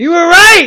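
high-pitched, loud excited exclamation.

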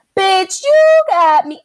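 mock outraged yell, high, loud and slow.

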